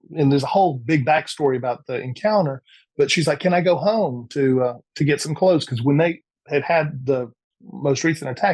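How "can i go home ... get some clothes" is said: plain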